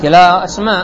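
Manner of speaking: ordinary delivery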